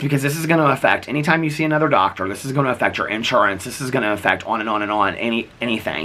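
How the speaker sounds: normal talking voice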